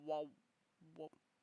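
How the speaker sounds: bottomed-out deepest voice, very hushed. Showing off the range of voices the speaker can do, lowest pitch voice. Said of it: "my lowest pitch pitch voice is".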